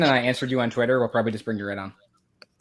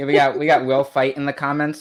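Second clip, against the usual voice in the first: ordinary talk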